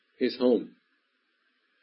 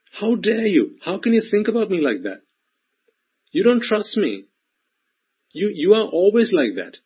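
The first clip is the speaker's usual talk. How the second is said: put-on high, whiny, indignant child voice. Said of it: "they'll say all sorts".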